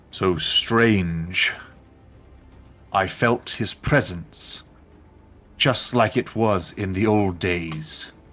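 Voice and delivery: deep, rumbling monster creature voice. A game master voices a creature speaking to the party; rumbling creature voice. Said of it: "this rumbling voice".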